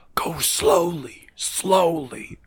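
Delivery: hushed whisper under the breath. Narrating a scene of moving carefully, giving one character's line, whispering. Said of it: "Gerard is whispering".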